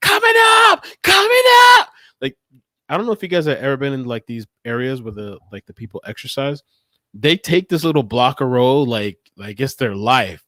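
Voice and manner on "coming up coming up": shrill, very high, loud scream. Retelling how a skater shouted while passing: imitating a woman screaming. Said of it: "she started screaming".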